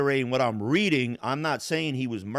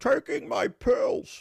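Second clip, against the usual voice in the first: rough, raspy, creaky character voice; 11 semitones higher than usual. Retelling answering a question about taking pills: Bane voice. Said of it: "I'm just doing the voice of Bane".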